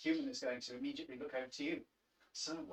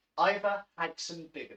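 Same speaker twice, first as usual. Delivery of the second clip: very loud, light Irish accent; 4 semitones higher, 11 dB louder than usual. Joking with a co-host about a chef's full name, in a mild Irish accent. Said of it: "that was my attempt at a mild Irish accent".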